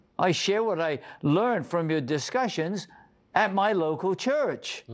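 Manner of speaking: usual speaking voice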